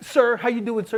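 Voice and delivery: overly proper politeness. Retelling how a manager greets the boss: imitating someone acting all proper. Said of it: "acting all proper".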